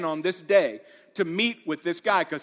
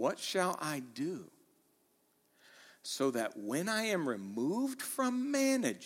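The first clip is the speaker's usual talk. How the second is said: slow, deliberate, unhurried reading aloud; 3 semitones lower, 11 dB quieter than usual. Speaker reads a verse aloud for the audience, reading slowly. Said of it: "Just read it slow".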